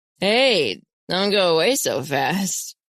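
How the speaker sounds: very drawn-out, slow, slurred words. A stranger calls after two people hurrying away, in a slurred voice. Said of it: "calls after us in a slurred voice".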